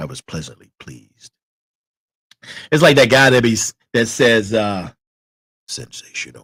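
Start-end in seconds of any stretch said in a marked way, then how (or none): 5.7-6.4 breathy, whispered deep baritone voice. Imitating a guy who says the word: imitating a heavy baritone voice. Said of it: "his voice is heavy baritone".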